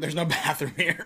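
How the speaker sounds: put-on drunken voice. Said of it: "I'm imagining a drunk person thinking".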